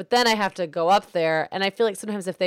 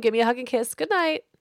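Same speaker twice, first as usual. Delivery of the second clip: put-on firm voice, higher; 6 semitones higher than usual. Retelling the bedtime reply to a child asking to sleep over: imitating own firm voice. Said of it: "I'm very firm and I'm just like".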